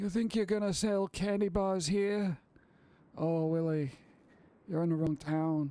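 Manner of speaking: mobster tough-guy gangster voice. Acting out the chocolate mafia threatening willy in a movie: mafia gangster voice. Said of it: "I want mafia like that".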